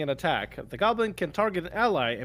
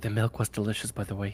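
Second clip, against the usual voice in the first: voiced stage whisper, half-whispered; 8 semitones lower than usual. Playing a character who leans in toward Big G: half-whispering in character. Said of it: "and just whisper".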